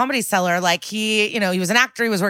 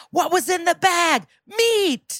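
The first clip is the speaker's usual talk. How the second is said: high-pitched mock yell, yelling back and forth. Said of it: "Ice-T and I just yelled".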